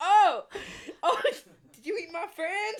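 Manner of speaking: very high, very loud, shrill, slow put-on Chinese accent. Retelling what people in china said when they pointed at him, put-on chinese accent. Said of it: "Is that your Chinese accent?".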